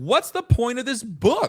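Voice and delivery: high, loud yell. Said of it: "I yelled at my screen".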